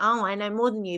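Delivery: plain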